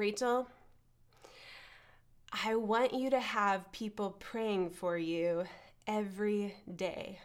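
low, hushed, grave, earnest, really serious tone. Retelling what he said when he pulled her aside, quoting in a really serious tone. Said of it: "in a really serious tone".

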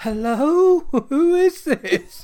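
put-on very high, very loud, very slow, shrill old lady voice. Retelling an old lady answering a threatening phone call: imitating a little old lady. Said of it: "this little old lady, like, answers the phone".

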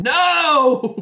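very high, drawn-out, stretched-out scream. Voicing a mage who steps inside and sees what happened: screaming. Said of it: "step inside now and see what you just did to Smaldoni and scream".

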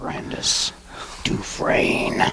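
quiet mutter under the breath. Narrating their character's action and muttering a name under breath. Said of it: "I mutter under my breath".

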